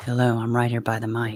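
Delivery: put-on low sultry sexy voice. Greeting viewers at the mic as a joke: put-on sexy voice. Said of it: "This is my sexy voice".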